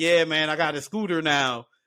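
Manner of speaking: put-on excited voice. Retelling an uncle showing off his new scooter: imitating Uncle Carl's excitement. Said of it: "he's just excited, like a little freaking kid".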